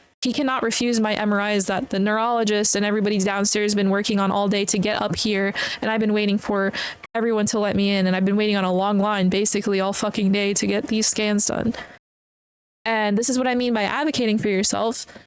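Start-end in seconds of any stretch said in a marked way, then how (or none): none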